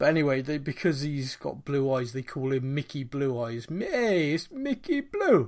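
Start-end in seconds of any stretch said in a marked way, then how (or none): 3.7-5.5 very high, slow, swooping mock mobster voice. Describing a mafia-family parody movie, doing its characters in a mafia parody voice. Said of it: "they all talk like".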